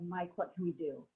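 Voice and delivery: ordinary talk, nothing marked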